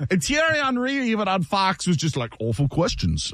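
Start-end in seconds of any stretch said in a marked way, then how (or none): 2.4-3.3 put-on awful British accent, pitched deep and low. Recounting what Thierry Henry said on Fox, in an awful British accent. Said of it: "that was an awful British accent".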